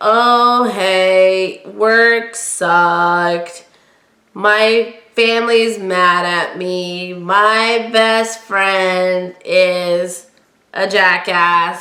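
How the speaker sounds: very slow, gloomy, hopeless drawl, every word dragged. Describing a pessimistic person, doing an Eeyore impression. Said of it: "that's my best Eeyore impersonation".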